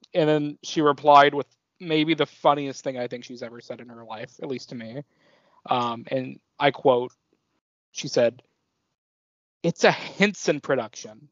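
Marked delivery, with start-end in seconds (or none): 9.6-11.0 put-on annoyed voice. The speaker quotes her funniest reply, imitating an annoyed voice. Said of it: "In the most like annoyed voice".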